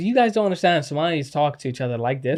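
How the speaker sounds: ordinary talk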